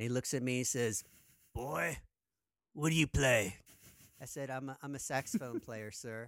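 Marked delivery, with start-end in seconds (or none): 1.5-3.6 put-on gruff old jazz musician voice. Speaker retells asking a jazz musician about auditioning for the band: gruff old jazz musician voice. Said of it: "with a gruff voice".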